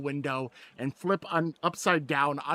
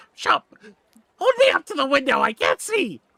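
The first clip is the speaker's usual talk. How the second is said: shrill, very high, very loud yelling; 10 semitones higher, 9 dB louder than usual. Voicing the small mayor who cannot reach the window, shouting. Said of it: "he's too small to see".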